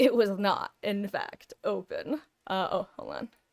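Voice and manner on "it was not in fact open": slow, deliberate documentary narrator voice. Recounting his own mistake with a gate, the speaker switches to a narrator's voice. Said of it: "Narrator's voice".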